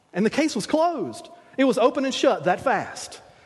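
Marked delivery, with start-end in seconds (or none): none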